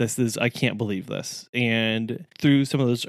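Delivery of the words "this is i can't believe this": mock crying, faked sobbing. Retelling a reaction to old goals when the pandemic hit: mock crying over goals. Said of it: "Mostly crying".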